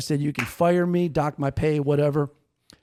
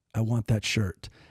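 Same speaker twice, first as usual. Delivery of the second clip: low-key, hushed, quiet, soft-spoken little voice; 5 semitones lower, 4 dB quieter than usual. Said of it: "I hear this quiet voice".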